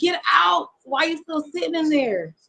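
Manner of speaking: half-shouted call. Retelling urging a friend to get out of the car: imitating own yelling. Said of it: "I'm yelling at the car".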